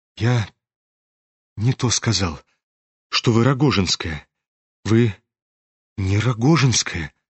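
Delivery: low, quavering, unsteady, trembling voice. The prince replies to a woman, in a trembling voice. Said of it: "дрожащим голосом выронил князь".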